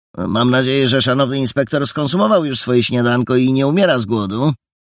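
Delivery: lighthearted, playful joking. Paragon addresses Jola, the inspector, joking. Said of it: "Paragon żartobliwie zwrócił się do Joli".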